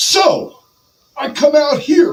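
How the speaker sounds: high, loud, swaggering wrestler voice. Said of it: "In a Ric Flair voice".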